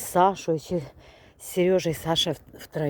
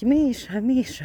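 put-on shouting, calling out; 7 semitones higher, 4 dB louder than usual. Retelling how she called out while you were out where cars pass, imitating her shouting a name. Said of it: "І вона кричить".

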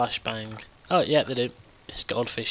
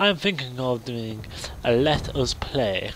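very posh, upper-crust put-on accent. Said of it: "very posh, like I sounded like a wanker there".

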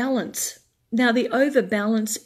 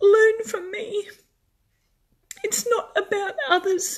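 tearful, crying, very high-pitched voice; 10 semitones higher than usual. Addressing strong women who help everyone else in their lives, crying. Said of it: "I'm going to cry now".

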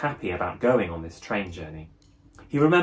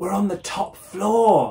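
very high-pitched, excited, exclaiming tone; 10 semitones higher than usual. Following the steward up the stairs, a passenger exclaims; exclaimed. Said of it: "Hal exclaimed".

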